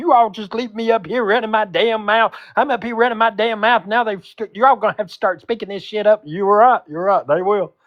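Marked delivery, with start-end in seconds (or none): 0.0-6.2 high, angry, scolding yell. Imitating her yelling at the others in Discord: imitating someone yelling. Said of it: "They're gonna get yelled at in Discord today".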